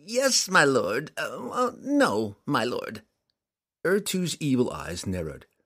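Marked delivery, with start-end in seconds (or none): 0.1-3.0 high, very slow, quivering, drawn-out whimper. Narrator reads the small demon answering his master Urtu, Telshaz whimpering. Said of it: "Telshaz quivered and whimpered".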